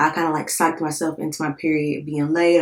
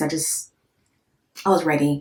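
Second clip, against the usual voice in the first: ordinary delivery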